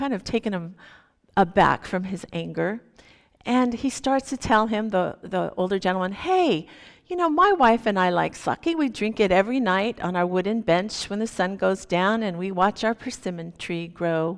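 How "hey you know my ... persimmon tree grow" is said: ordinary talk, nothing marked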